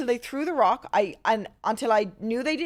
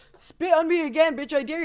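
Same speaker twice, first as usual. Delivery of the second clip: mock high-and-mighty, cocky, pitched-up taunting tone; 5 semitones higher than usual. Retelling the guy's taunt from the car: imitating a high and mighty taunt. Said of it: "trying to act high and mighty".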